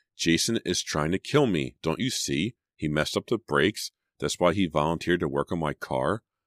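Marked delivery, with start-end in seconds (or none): none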